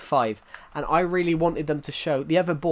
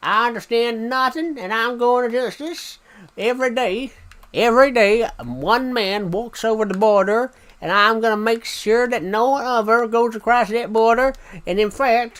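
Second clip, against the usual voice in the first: loud, pitched-up, laid-on, put-on American accent; 9 semitones higher, 6 dB louder than usual. Asked for their best American accent, speaker does an American accent. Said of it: "Give us your best American accent".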